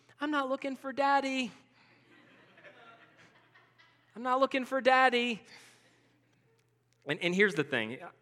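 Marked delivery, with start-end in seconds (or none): 0.2-5.4 put-on small, sweet child's voice, pitched up. Retelling a game of hiding, a father repeats his child's reply in Brooke's little sweet voice. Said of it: "I just hear that little sweet voice".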